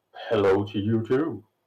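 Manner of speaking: gurgling, thick, burbling monster voice. Playing a strange giant-eyed creature greeting the party, in a thick, burbling voice. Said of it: "he says in a thick, burbling voice".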